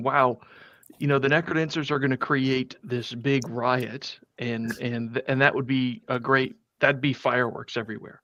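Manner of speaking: ordinary talk, nothing marked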